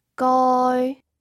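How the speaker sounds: goi said in Cantonese first tone, high and level. Reviewing cantonese tones before a test, first tone example: high flat tone on goi. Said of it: "The first tone is high and flat".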